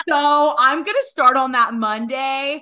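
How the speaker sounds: slow, deliberate, loud, drawn-out bitchy voice. Retelling what a friend said about when to start: imitating a friend in a bitchy voice. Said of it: "bitch voice".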